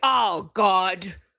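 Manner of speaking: awful, horrible put-on British accent. Imitating how an absent friend will react, in a horrible British accent. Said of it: "your British accent is horrible".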